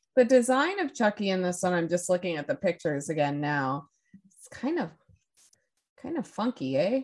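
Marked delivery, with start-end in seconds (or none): 4.4-7.1 put-on sing-song Canadian accent, pitched up, with "eh". Describing the look of a doll in pictures: Canadian accent. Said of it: "I went Canadian for a second".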